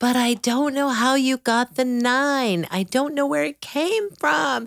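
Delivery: put-on upset little boy's high-pitched wailing scream. Recounting a taped boy yelling at his mom over a math program, imitating a child screaming. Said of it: "he was screaming at the top of his lungs".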